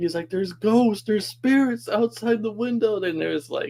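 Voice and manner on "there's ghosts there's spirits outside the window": high-pitched, freaked-out panic. Retelling a friend's reaction to lights outside the train window: imitating a friend freaking out. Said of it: "I hear him below me start freaking out".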